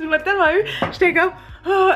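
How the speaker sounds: high, laughing reaction.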